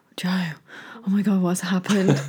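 put-on utterly solemn, grave, deadly serious tone. Retelling how Jack reacts to an injury: imitating Jack going deadly serious. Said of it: "He goes deadly serious and looks at me like".

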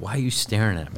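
plain

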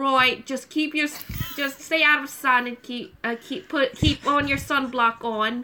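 bad, put-on Australian accent. Retelling what the australian guy ghost said, in a bad australian accent. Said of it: "You have the worst Australian accent I've ever heard".

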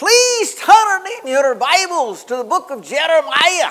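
put-on thick Scottish accent. Recalling a church service, quoting the Scottish preacher: heavy Scottish brogue. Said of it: "a Scottish preacher with a heavy Scottish brogue".

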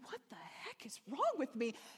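mock stifled weeping, holding back sobs, swooping pitch. Recounting starting to weep loudly in front of someone, retelling stifled weeping. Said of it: "trying to stifle it".

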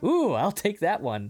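high, thrilled, eager, excited little ooh. Retelling how another person reacted to a haunted room, imitating someone excited. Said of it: "he says it so excited".

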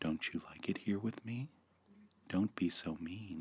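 very quiet, hushed, gentle, soft-spoken voice. Speaker retells what was said next during a video call, in a softer voice. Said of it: "And then in a softer voice said".

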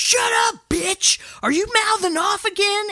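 shrill, very high screaming rant. Retelling a film scene where one character yells: imitating someone screaming. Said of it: "just starts screaming at Venna".

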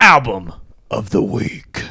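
odd, shadowy, dark-toned voice. Host introducing the show's recurring album segment in a weird dark voice. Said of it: "That was a weird voice. That was kind of dark".

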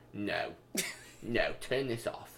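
half-whispered, soft, breathy muttered voice. Recalling a film they watched together, the speaker does an impression of the listener. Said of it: "It's a good impression of me".

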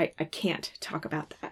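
teary, choked-up, breathy whisper, halting, stammering. Retelling a scene where Dean struggles to speak: imitating Dean choked up. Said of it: "struggling through saying".

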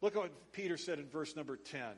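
ordinary talk, nothing marked

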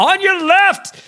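booming, loud, very high yell. Describing how a man yells at people until they move: loud Rich Williams voice. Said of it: "in his like big loud Rich Williams voice".

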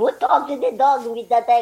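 put-on high voice with heavy Czech-Russian Eastern European accent. Retelling how grandmother spoke about the dog: high-pitched heavy Czech-Russian accent. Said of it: "heavy Czechoslovakian / Russian-ish accent ... with a high-pitched voice".

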